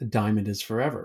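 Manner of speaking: ordinary talk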